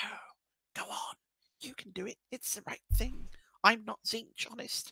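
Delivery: high, whispery, sly little tempter voice. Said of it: "he hears a little voice going".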